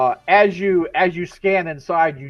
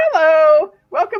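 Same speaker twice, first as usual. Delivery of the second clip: over-eager, overexcited, very high and loud voice; 12 semitones higher, 6 dB louder than usual. Narrating a scene, the speaker voices the barista greeting customers: overly excitable barista voice. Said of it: "the overly excitable barista, she says".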